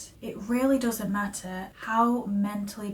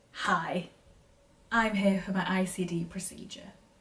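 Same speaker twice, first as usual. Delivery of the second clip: plain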